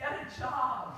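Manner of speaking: imitated Boston accent. Speaker retelling an insult shouted at him from passing cars, in a boston accent. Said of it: "imagine these in the Boston accent".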